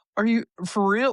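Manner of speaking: acted, very high, eager and hopeful tone. Retelling what a woman said after being told she's almost there, mock-hopeful voice. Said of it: "Like this, like hope".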